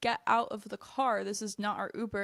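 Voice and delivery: ordinary talk, nothing marked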